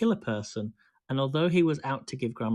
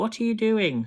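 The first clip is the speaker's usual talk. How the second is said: piercing, shrill, high call; 9 semitones higher, 4 dB louder than usual. Narrator reading a story, the grandmother calling from the next room: shrill voice. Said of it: "came the shrill voice from the next room".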